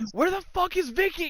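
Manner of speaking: very high-pitched, raw screaming yell. Retelling a wrestler falling off a ladder: imitating Eddie screaming.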